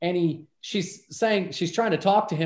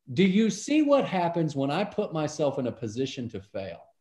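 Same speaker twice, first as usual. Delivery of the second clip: mock cool, composed, very calm, swooping intonation; 3 semitones lower than usual. Retelling how he stopped and turned, imitating him saying it calmly. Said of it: "he very calmly says".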